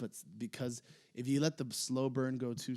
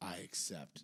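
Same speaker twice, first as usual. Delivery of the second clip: mock stern voice, loud, then quieter; 5 dB louder than usual. Retelling a man's answer to the crowd's puzzled reaction, as the speaker tells the story; loud and stern, imitating it. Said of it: "very loudly, very sternly just says".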